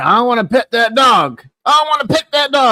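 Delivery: put-on drunk pleading voice. Retelling how a drunk companion kept asking to pet a dog: imitating a drunk friend getting louder. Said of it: "And he kept getting louder".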